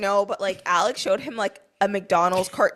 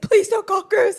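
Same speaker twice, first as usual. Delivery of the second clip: put-on very high, frantic, panicked little kid voice, pleading; 12 semitones higher, 3 dB louder than usual. Retelling a child's frantic plea: imitating a panicked child pleading. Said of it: "He is freaking out".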